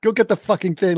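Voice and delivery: high, bossy, pushy yell. Retelling how the wife orders the gangster around: imitating the wife yelling. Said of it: "just yells at him".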